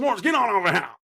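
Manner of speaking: very high-pitched, drawn calling holler. Picturing calling the dog s'mores back the same way: pretend yelling at a dog. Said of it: "I can just picture me talking to S'mores".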